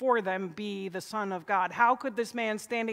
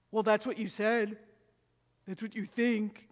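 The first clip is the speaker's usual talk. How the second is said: put-on typical teenager's inflection. Describing evasive replies to a yes-or-no question; imitating teenage inflection. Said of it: "You can hear the teenage inflection".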